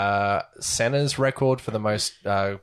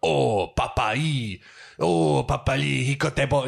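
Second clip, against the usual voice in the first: put-on excited French accent, higher, slower; 4 semitones higher than usual. Retelling what they said at the start, in a mock-excited French accent. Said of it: "they're French, so they're just like super excited".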